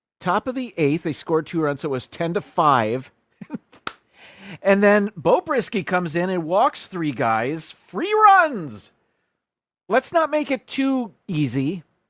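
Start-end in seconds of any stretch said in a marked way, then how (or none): 4.6-11.8 raised, animated voice, high and swooping. Reviewing a baseball box score, the speaker talks with a raised voice. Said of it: "I'm raising my voice".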